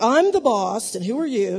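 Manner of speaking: mock-haughty attitude. Showing the listeners an attitude to avoid, mock-haughty. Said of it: "I could get like that real fast".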